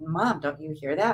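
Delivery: ordinary delivery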